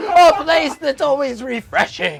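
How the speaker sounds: bad nature-narrator voice, slow, high and loud. Retelling watching Blue Planet: worst David Attenborough impression. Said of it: "the worst David Attenborough impression ever".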